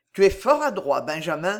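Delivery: plain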